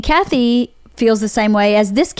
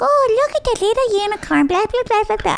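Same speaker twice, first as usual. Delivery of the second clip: put-on very high, squeaky baby-talk voice; 12 semitones higher than usual. Describing a woman cutting open unicorn toys, imitating her baby talk. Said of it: "she's talking, baby talk".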